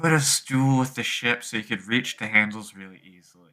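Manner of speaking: hushed whispering. Describing how she turns to you and speaks, whispering. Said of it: "she whispers".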